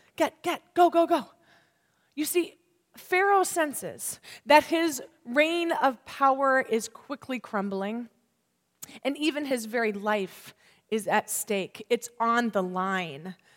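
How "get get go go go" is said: high, scared, rushed voice. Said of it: "Can you hear it in his voice?".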